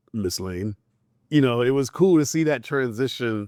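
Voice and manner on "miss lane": deep, soft, calm, confident lowered voice. Retelling how Superman sounded, after Clark Kent: deeper confident Superman voice. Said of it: "a little deeper, a little more confident".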